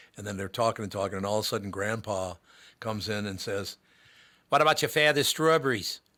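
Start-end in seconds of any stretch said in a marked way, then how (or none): 4.5-6.0 put-on Boston accent with lifted, higher pitch. Retelling a scene where Grandpa comes in and speaks, Boston accent. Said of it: "my favorite Boston accent".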